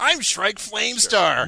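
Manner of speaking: very high, shrill, very loud put-on voice. Reading thread posts aloud as their poster, Shrike Flamestar impression. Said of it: "do your impression of Jack Shrek".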